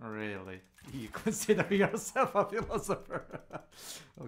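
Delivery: talking through laughter. Reacting to another player calling himself a philosopher, laughing while talking. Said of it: "I'm not laughing at you".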